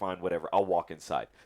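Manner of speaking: usual speaking voice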